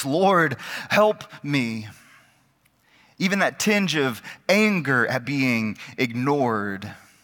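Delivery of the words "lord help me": play-acted desperate pleading tone, desperation showing. Speaker retelling how a woman at Jesus' feet begged him, acting out a desperate plea. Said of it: "Hear the desperation in her voice".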